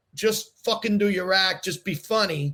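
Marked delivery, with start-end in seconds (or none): none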